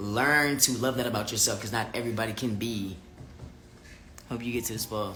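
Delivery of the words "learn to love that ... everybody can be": ordinary delivery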